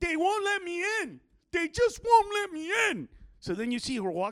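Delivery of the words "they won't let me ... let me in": play-acted, amped-up, shrill, high-pitched screaming. Retelling a woman screaming toward a car, retelling a scream. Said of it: "she screams to the car".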